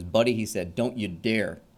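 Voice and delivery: put-on tough, gruff New York accent. Retelling a police lieutenant warning him off a barricade: tough New York accent. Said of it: "the tough New York accent".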